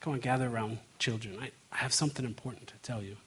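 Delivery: low, hushed, quick, close-in confiding tone. Speaker acting out Moses at the end of a long speech: lowered voice. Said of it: "He kind of lowers his voice and says".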